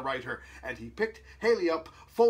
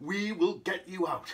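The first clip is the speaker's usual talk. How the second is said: ordinary delivery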